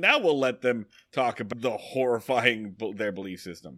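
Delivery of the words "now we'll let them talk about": plain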